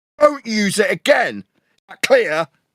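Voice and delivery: furious, high-pitched, enraged shout. Berating a globe believer for using a flat earth measurement: furious shouting. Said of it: "because I'm furious".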